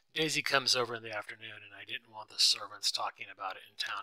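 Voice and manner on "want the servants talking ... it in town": ordinary delivery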